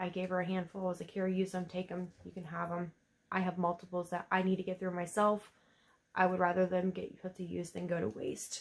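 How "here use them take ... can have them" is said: plain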